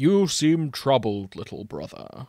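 storybook wizard voice. Reading the older brother engine's words to his little brother: Gandalf impression. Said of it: "I'm going to do my best Gandalf impression".

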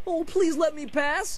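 mocking imitation. One speaker mimics the visitor's plea back at him, mocking imitation. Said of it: "You sound like my weakling friend over here".

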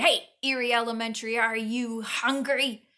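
loud shouted call. Reading a story: Sam calls out to Eerie Elementary as its mouth nears Antonio, shouting. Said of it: "Sam shouted".

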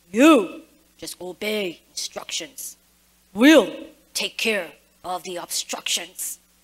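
very low, deep, stern radio voice. Retelling a radio order to a panicky pilot landing, in a mock-stern voice. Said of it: "That's my stern voice".

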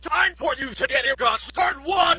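furious, raging, shrill all-out yell. Someone asks the smart speaker the time; it answers with Alexa rage edition yelling. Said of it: "[Alexa RAGE Edition]".

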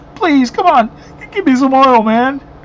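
mock desperate, pleading, begging voice. Reading a parable aloud, the speaker acts out one of the foolish; mock begging. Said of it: "You could see him just begging".

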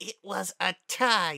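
very slow, high, forced through gritted teeth. A racer, just introduced as taking second in today's race, answers; through clenched teeth. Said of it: "Spitfire said through clenched teeth".

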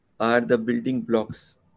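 ordinary talk, nothing marked

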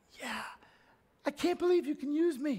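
voice leaps very high, unexpectedly. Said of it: "I don't know why my voice just got high".

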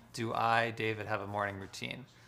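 ordinary talk

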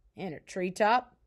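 plain reading voice

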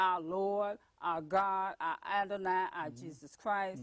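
plain

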